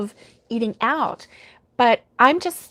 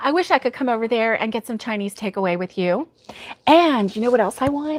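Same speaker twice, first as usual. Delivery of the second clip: usual speaking voice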